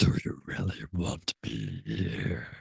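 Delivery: very soft, mighty, put-on powerful dragon voice. Recounting how the listener's dragon sounded, in a put-on powerful dragon voice. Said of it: "a very powerful, like self empowered um, uh, voice".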